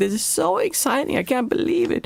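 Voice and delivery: acted, very high, gushing, over-the-top excitement. Telling Debbie about a guy on the boat, imitating his over-the-top excitement. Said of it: "And he was completely over the top".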